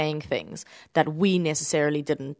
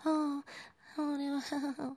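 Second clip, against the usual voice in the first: much higher, soft mock voice. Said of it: "speak in my deep voice and not be like".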